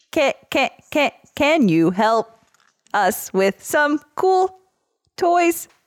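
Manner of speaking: mechanical robotic voice. Player asking the DM again for help, in a robot voice. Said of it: "ask him the thing again in mm-hmm. a robot voice?".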